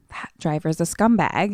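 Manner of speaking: ordinary talk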